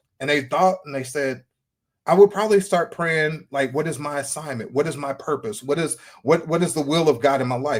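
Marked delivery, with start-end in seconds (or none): none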